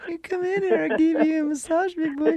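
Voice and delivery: terrible put-on very high woman's voice. Teasing a co-host, imitating Susan. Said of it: "the worst woman's voice I've ever heard".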